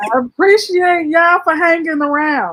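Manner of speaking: exaggerated, shrill, very loud, high-pitched shouting. Demonstrating the right way to talk to them, mock yelling. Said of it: "Why she yelling at them though?".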